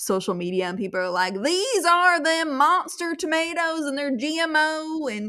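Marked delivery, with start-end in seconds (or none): 1.4-5.1 put-on rural country accent, drawn out. Imitating people on social media about sprouting tomatoes: country accent. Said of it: "I'm giving a country accent".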